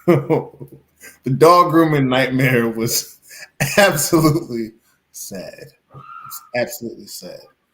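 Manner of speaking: talking through laughter. Calling a dog grooming nightmare sad, laughing while talking. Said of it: "Why are you laughing?".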